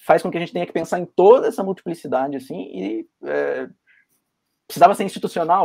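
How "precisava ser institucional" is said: higher, louder, fast, emphatic insistence.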